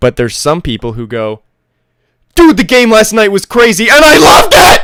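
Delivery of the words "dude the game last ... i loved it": very high, very loud, shrill, hyped bro scream. Showing how some people talk about last night's game; imitating a screaming jacked-up bro. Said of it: "jacked up bro who just likes to scream".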